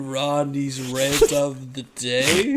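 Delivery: very slow, flat, every word dragged out.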